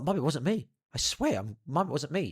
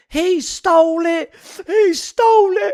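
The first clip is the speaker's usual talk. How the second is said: put-on bawling child, shrill, very high and loud; 15 dB louder than usual. Retelling a childhood play day, imitating Essen crying. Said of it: "Essen starts crying".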